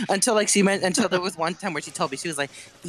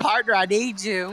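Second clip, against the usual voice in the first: put-on country accent, higher pitch; 5 semitones higher than usual. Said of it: "with a country accent".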